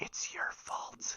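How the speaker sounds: tiny, faint whisper. Voicing a voice in a player's head after a death: tiny whisper. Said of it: "it's a tiny whisper".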